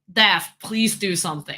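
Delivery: plain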